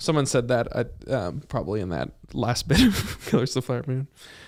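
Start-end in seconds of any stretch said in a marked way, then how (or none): none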